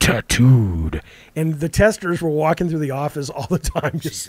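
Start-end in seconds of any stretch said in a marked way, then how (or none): 0.0-1.0 put-on video game announcer voice. Imitating a game's death announcement: Mortal Kombat ripoff announcer voice. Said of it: "this very Mortal Kombat ripoff voice".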